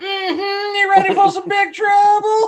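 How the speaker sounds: shrill, high, loud, drawn-out talking-toy voice. Retelling a board game toy that talks when pushed: imitating the toy's voice.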